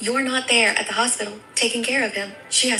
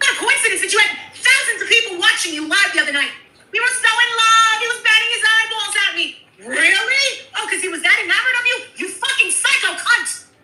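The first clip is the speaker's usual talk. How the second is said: raging, furious screaming; 12 semitones higher, 6 dB louder than usual. Arguing with another speaker and insulting them: screaming angrily. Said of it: "Why are you even screaming?".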